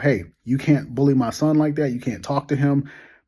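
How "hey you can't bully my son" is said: plain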